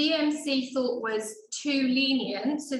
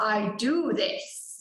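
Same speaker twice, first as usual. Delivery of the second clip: masterful, in-charge, authoritative and commanding tone; 3 semitones lower than usual. Retelling a surgeon's reply to a theatre staff member: imitating a masterful tone. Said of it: "in a very sort of, you know, masterful way".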